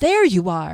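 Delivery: loud, fed-up, exasperated calling out. Narrator reads Fennel arriving after searching for Jaskelin: exasperated call. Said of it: "an exasperated voice called".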